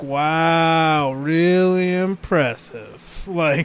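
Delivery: dripping, horribly sarcastic announcer tone, drawn-out wow. Describing a game's announcer reacting to stunts: mimicking a sarcastic announcer. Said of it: "the announcer becomes horribly sarcastic".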